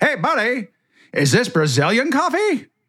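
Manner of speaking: play-acted, very high yelled voice. Retelling a guy calling out across a hushed restaurant: imitating someone yelling out. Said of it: "some guy yells out".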